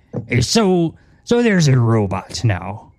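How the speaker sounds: very slow, drawn-out pirate drawl, pitch swinging around. Voicing Graf asking the crew about their new robot: pirate voice as Graf. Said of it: "otherwise I forget he's a pirate".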